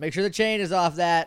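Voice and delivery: loud, high, commanding authoritative yell. Retelling what the English teacher yelled over the chainsaw, retelling an authoritative yell. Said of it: "yelling over the chainsaw in a very authoritative voice".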